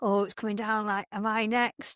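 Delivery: put-on nervous, worried woman's voice. Retelling what two ladies waiting their turn said: imitating nervous women. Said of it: "they were a bit nervous and like".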